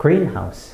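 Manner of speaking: greenhouse said with stress on first syllable green. English stress lesson on compound nouns: stress on green in greenhouse. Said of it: "무조건 앞에 강세를 두고 발음해야 해요".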